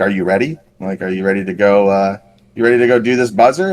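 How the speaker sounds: normal talking voice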